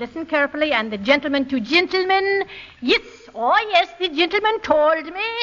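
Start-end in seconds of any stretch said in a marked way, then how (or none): 2.8-5.2 high, put-on Irish brogue. Coaching a listener to imitate him, demonstrating a good brogue. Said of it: "make it a good brogue".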